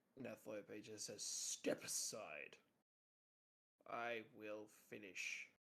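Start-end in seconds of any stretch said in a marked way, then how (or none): 1.2-5.4 very slow, drawn-out beast growl. Game master voicing a clawed creature speaking to a player, growling. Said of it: "he just growls at you".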